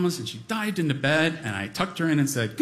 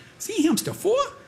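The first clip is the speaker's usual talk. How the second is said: put-on very high, little, squeaky toddler voice; 13 semitones higher than usual. Speaker retells watching toddler Nina read to her dolls, imitating Nina's squeaky toddler voice. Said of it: "her little squeaky toddler voice".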